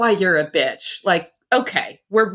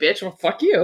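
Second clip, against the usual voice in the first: put-on muttering under breath. Retelling passing each other at work: imitating muttering under breath. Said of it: "under our breath".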